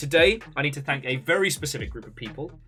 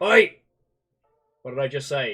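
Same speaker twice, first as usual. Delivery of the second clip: stern, scolding dad telling-off voice; 4 dB louder than usual. Telling off the dog while signing off, in a dad voice. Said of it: "Dad voice has come out".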